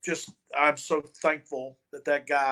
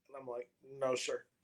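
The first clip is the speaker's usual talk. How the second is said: normal talking voice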